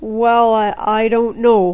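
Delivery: hesitant, faltering voice trailing off. Mr. Manapouli hesitates when Joe asks him something, hesitant, voice trailing off. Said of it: "his voice trailed off".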